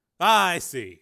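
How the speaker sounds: loud, relieved voice. A voice behind the partition answers Steele after hearing he's a cop, relieved. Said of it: "The voice sounded relieved".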